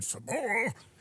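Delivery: very high, shrill, pissed-off angry yell. Imitating the sausage guy getting angry again: imitating an angry shout. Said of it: "gets all pissed off again".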